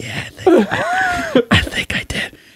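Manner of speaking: whispered voice. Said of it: "so I was, like, whispering".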